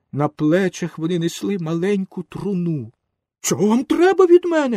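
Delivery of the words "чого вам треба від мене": terrified shout, very high and loud. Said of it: "закричав Пінокіо і перелякано сів".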